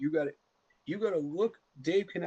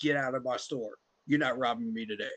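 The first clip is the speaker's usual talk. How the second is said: play-acted, no-nonsense, firm, steady, unhesitating voice; 3 semitones lower than usual. Describing store owners facing robbers, retelling an unhesitating order. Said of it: "There is no hesitancy in their voice".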